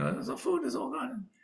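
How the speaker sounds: mock, high-pitched, screamed-out cry of alarm. Retelling a story, speaker acts out the Rebbetzin finding the food gone: imitating someone screaming. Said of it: "So she's screaming".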